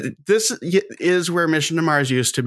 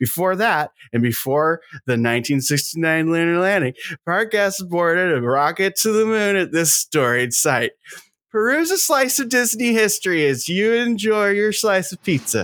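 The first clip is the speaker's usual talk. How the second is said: obnoxious corporate-guy voice; 4 semitones higher than usual. Taking over to read a park description aloud, in a corporate douchebag voice. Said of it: "When you did your corporate douchebag voice".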